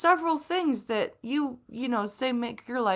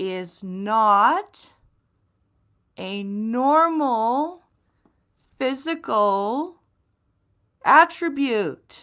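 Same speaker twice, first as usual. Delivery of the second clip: very slow, halting word by word, long drawn not; 4 dB louder than usual. Speaking to an audience about blindness, saying it really slowly for those in the back. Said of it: "I'm going to say this really slowly".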